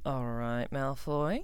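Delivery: low, wary, suspicious, probing tone. Blaise asks Draco, looking from Draco to Ginny: suspicious. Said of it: "asked Blaise suspiciously".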